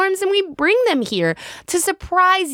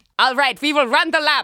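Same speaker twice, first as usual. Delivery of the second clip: put-on German accent, faster. Recalling the kids being told to run laps, German-accented Hinchin impression. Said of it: "German accent".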